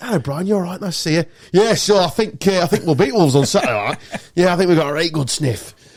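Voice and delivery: put-on northern English accent. Admitting he slips into it talking about Leeds, retelling a chat in a northern accent. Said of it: "So I just suddenly went northern".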